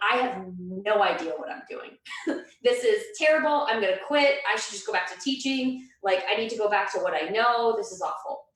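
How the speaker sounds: put-on crying, tearful, despairing outpouring. Retelling own past words said crying in the bathroom: retelling own crying words. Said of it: "going into the bathroom that day crying".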